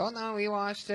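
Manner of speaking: high, soft, put-on Mexican accent.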